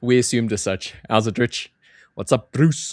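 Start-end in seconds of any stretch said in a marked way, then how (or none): 1.1-2.9 put-on South African accent with rolled R. Host greeting two chat viewers in a south african accent. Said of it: "my South African accent there for you".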